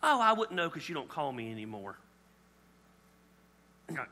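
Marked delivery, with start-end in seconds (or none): 0.0-1.9 put-on sweet grandmother voice, lower. Acting out a grandmother greeting someone she hasn't seen: imitating Granny's sweet way. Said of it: "she's trying to do it in her sweet way".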